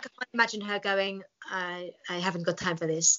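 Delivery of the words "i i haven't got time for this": half French, half Italian accent. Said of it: "That was my [name]".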